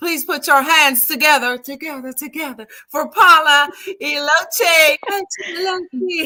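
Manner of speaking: high, loud hype announcer voice with echo effect.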